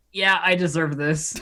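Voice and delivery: normal talking voice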